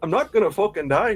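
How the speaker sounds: put-on Scottish accent. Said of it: "when did Kavar become Scottish?".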